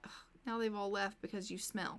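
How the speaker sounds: usual speaking voice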